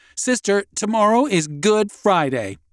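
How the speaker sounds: smug confident tone. Reading a story, Clara answers Sister's question in front of the class: smiling smugly. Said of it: "Smiling smugly".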